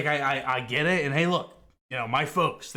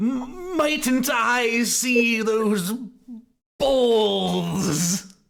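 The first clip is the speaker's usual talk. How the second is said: very high, very slow, exaggerated overdone politeness; 10 semitones higher, 5 dB louder than usual. Playing a character kneeling with mock formality: exaggerated mocking courtesy. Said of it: "He's like".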